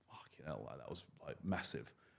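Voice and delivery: very quiet, hushed, panicked, panicky muttering voice. Speaker retells a recorded onboard moment, imitating a panicked voice. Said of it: "you can hear the panic in my voice".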